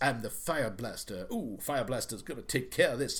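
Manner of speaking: odd, weird, affected put-on cartoony voice. Describing an actor's odd delivery in a movie, imitating his weird affected voice. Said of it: "So he's talking like this".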